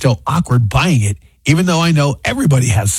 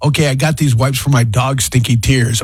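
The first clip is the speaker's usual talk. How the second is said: ordinary talk, nothing marked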